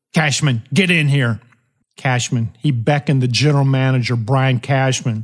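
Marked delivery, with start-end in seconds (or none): none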